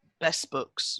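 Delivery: put-on dry, flat, straight-faced deadpan delivery. Retelling a classroom story, quoting one of the boys: retelling a deadpan line. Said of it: "without cracking a smile".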